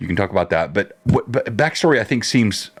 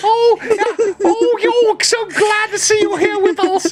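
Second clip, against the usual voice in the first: very high, comic falsetto lady voice; 4 dB louder than usual. Showing the character voices they use, doing their Monty Python lady voice. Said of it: "and then my Monty Python, which gets mocked".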